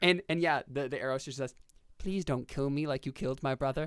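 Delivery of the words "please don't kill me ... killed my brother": pleading, begging cry. Voicing a talking arrow as the bow is drawn again: pleading arrow cry. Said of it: "the pleading cries of the arrows".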